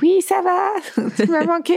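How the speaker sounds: very high, slow put-on cat voice.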